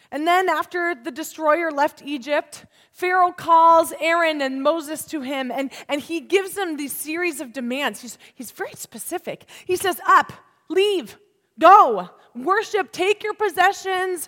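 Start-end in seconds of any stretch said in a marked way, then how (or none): 10.0-14.2 high, loud, scared, blurted out. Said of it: "This guy's scared".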